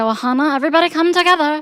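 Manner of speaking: put-on cartoon creature voice. Offering an annoyed listener a different way of talking: Stitch voice. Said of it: "talking like Stitch and say".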